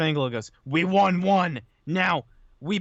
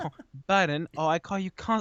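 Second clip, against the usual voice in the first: bad, weak, clumsy put-on British accent; 4 dB quieter than usual. Retelling a line Paige said to Corbin: bad British accent imitating Paige. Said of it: "I can't do a very good British accent".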